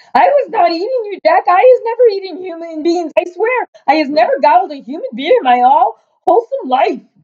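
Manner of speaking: very high, shrill, pleading, begging screech. Great Brute cries out to Jack in his nightmare: screeching. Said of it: "he screeched".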